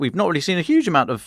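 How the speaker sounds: voice accidentally jumping high, rushed and wide.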